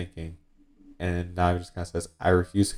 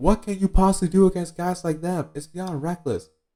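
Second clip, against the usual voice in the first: put-on very high, shrill, desperate-sounding shout; 12 semitones higher than usual. Retelling a scene where Nami yells at the mayor, imitating Nami yelling. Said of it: "Nami starts to yell".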